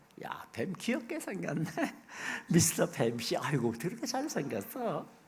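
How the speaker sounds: soft, giggly, sweet cooing voice with a laugh. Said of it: "웃으면서 얘기했을 거예요".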